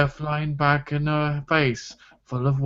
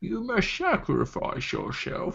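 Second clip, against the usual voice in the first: put-on whispered, hushed old man voice; 6 semitones higher, 6 dB quieter than usual. Talking about Batman's Bane, the speaker says a line in an old Sean Connery voice. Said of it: "You sound like an old Sean Connery".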